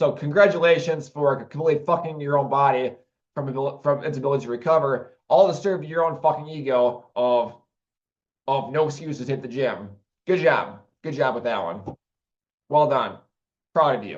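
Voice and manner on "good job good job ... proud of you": dry sarcastic tone, not sincere. Ranting about people who wreck their bodies at the gym: sarcastic praise. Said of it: "Sarcasm intended".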